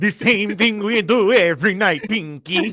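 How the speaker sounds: very loud, high, belted-out cartoon voice. Answering a friend's Pinky line with Brain's reply, in a Brain cartoon voice. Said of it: "you sound like Brain".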